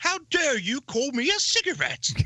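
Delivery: fake Cockney twang, pitched way up.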